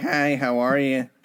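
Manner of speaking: slow, gawky, awkward schoolkid voice. Mocking the other speaker's greeting: imitating an awkward kid. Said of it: "like the awkward kid".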